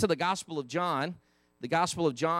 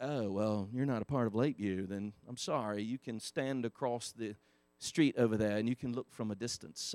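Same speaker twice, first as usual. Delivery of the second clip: put-on British accent, low and soft; 7 semitones lower, 9 dB quieter than usual. Retelling how some church people talk to outsiders, in a put-on british accent. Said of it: "I felt like I needed a British accent".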